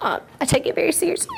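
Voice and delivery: high, wavering voice catching with emotion.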